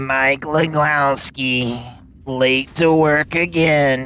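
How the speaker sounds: very slow, dragging slug monster drawl. Showing the voice used to act like the slug, in a Monsters, Inc. slug voice. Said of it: "that's my voice I do when I'm trying to act like the uh the slug".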